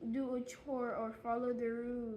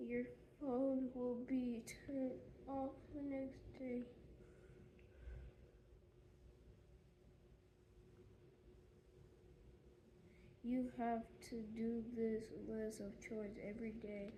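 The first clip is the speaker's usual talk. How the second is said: very quiet, barely audible, increasingly quieter voice; 10 dB quieter than usual. Reading a chore list aloud when told to read it: speaking barely audibly. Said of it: "I can barely hear you".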